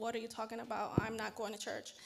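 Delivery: ordinary delivery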